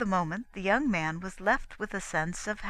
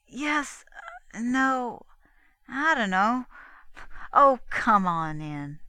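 very slow, embarrassed, halting stammer; 3 semitones higher, 4 dB louder than usual. An embarrassed girl answers a puzzled man's question, embarrassed stammer. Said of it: "She stammered in reply".

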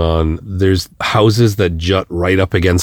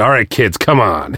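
firm, stern, reining-in dad voice; 2 semitones higher than usual. A director recalls reining in his own kids while filming, in his dad voice. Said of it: "Get out the dad voice".

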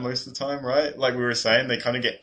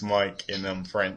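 ordinary talk, nothing marked

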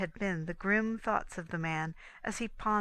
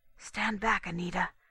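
hushed whispering. Having lit a match, she speaks to her companion, whispered. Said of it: "she whispered".

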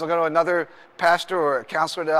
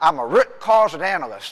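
put-on wild, slow, drawn-out Tennessee accent; 3 dB louder than usual. Retelling a man's reply when asked his title, in a Tennessee accent. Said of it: "He had this crazy Tennessee accent".

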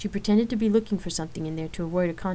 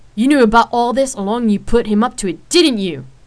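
furious, very loud angry shout; 4 semitones higher, 13 dB louder than usual. Rain confronts Lark about the shoot, asking angrily. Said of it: "Rain asked angrily".

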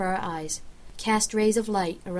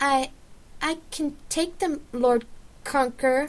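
anxious, stumbling, high-pitched nervous stammer; 7 semitones higher than usual. Reading Petra addressing the Lord Conqueror in a story, nervous stammer. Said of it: "Petra stammered nervously".

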